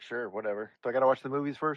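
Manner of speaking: usual speaking voice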